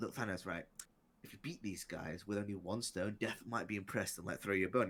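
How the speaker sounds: acted devil-like whisper. Retelling a comic scene where the devil advises Thanos: imitating the devil whispering. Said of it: "he literally whispers".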